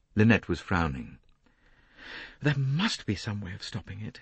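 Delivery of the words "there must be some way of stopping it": hushed, soft murmur. Narrator reading a woman's line in a conversation, murmured. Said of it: "she murmured".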